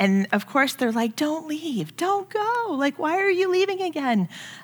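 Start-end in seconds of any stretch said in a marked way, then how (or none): 1.2-4.3 put-on high, pleading small child's voice. Mother retells her young kids begging her not to leave, imitating kids pleading. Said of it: "sometimes it was just pleading".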